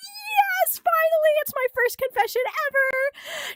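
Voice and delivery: very high, excited freak-out with drawn-out "yes". Retelling a girl's thoughts after a boy confesses to her: acting out her freaking out. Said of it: "she's freaking out".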